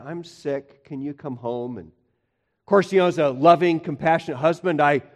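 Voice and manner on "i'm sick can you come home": sad, very quiet voice. Retelling his wife Heidi calling him at work, imitating Heidi's sad voice. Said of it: "called me up with this sad voice and said".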